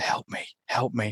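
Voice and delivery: faint, slow, drawn-out whisper. Retelling a film scene, quoting a voice from the barn: imitating a whisper. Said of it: "whispering coming up from the barn".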